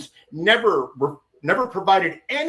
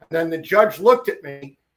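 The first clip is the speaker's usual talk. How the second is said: ordinary talk, nothing marked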